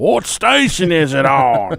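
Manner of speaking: put-on slow, suspicious old man voice.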